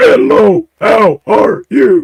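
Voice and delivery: high, very slow speech on the in-breath. Imitating a man's Bigfoot recordings: imitating talking while breathing in. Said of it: "he's just talking while he breathes in".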